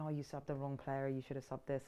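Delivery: ordinary delivery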